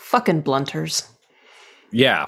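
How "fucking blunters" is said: muttering under the breath, higher pitched. A player's character, as an untouchable comes through the door, mutters under breath. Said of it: "under my breath, I just, like, mutter".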